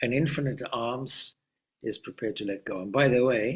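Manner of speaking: ordinary delivery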